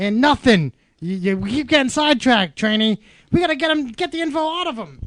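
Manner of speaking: high, loud yell.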